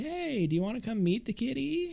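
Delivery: cheery, very high, sweet, sing-song voice.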